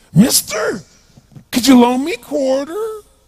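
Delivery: weird put-on voice. Retelling what a man said after popping his head up close; bizarre put-on voice. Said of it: "He had this really bizarre looking sounding voice".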